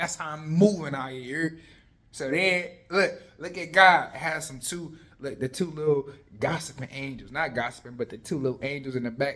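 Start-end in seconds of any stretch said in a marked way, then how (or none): 0.0-1.6 loud, furious, combative king voice ranting. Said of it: "He's like".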